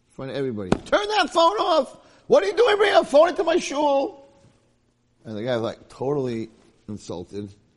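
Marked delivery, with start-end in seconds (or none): 0.7-4.3 shrill, very high, loud scolding scream. Telling how a rabbi scolded a man in front of everybody: retelling a scream. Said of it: "the rabbi screams at him in front of everybody".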